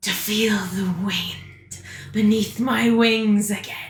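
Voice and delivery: mighty, powerful dragon voice. Storyteller voicing Silverlight as she flies with two players, in Silverlight's mighty voice. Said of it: "Both of you hear a mighty voice".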